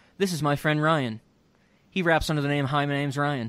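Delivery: ordinary talk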